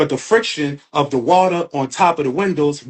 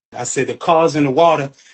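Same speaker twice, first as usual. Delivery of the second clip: ordinary talk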